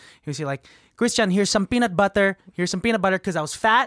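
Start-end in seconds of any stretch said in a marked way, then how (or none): 1.0-2.4 fake Filipino accent, higher pitch. Retelling what a boy on the tennis courts used to say to him, mock filipino accent. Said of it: "He would do the Filipino accent".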